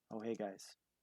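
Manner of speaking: tiny, muted, very quiet hushed voice. Voicing a character greeting the group after a loud, raucous entrance: very quiet. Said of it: "just a very quiet".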